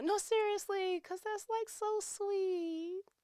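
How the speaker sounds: very high, teary gush, close to tears. Talking about a husband who calls to hear about the day, tearing up. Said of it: "I'm tearing up now".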